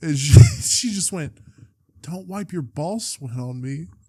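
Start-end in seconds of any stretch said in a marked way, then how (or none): 2.0-3.9 soft, shaken, upset voice, play-acted. Retelling her reply after the shower and bed, imitating a shaken voice. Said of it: "like in a shaken voice".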